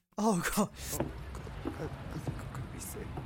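wet, queasy whisper, sounding about to be sick. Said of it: "the really weird like I'm about to be sick sort of whisper".

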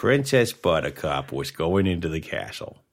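put-on low old-man storytelling voice. Answering another speaker's attempt, this speaker does their own old man impression. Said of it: "that's a little better than mine".

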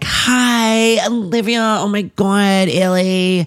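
fake, put-on niceness, very high, slow and drawn-out. Retelling opening the front door to Olivia, acting out a fake greeting. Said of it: "I'm all fake and I'm like".

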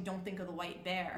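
ordinary talk

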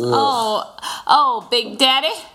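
Southern American drawl. Recalling a woman pretending to fancy a man, southern american drawl. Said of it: "Southern American drawl".

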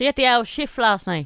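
attempted Offaly accent. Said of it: "Is that Offaly?".

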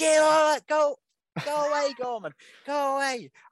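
play-acted shrill, very high, loud shouting. Recounting a match moment, retelling a shout at a player. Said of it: "I was shouting at him".

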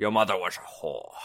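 put-on Scottish accent, laid on, film-star style. Showing others that you can do a Scottish accent, do a Sean Connery impression. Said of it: "That's that's my Scottish accent".

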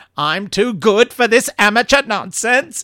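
high screech. Retelling how a toy Dalek in the corner woke up, screeching Dalek voice. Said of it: "it screeched".

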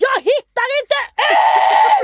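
shrill, booming, very high, long-drawn scream. Retelling being lost in a shop, screaming at the end: imitating own past shouting. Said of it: "står jag och skriker bara".

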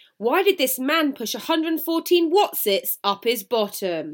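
booming, loud, slow, deliberate delivery. Starting a story with a question, saying it really loudly. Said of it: "I said that really loudly".

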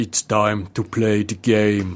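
very slow, deliberate, weighty delivery. Doing an Arnold impression of a wrestling entrance line. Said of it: "That's my Arnold impression".

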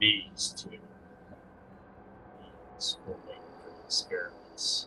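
sinister, dark voice barely above a whisper. Voicing a hooded figure looming over two captives: dark ominous voice. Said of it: "dark voice ominously saying".

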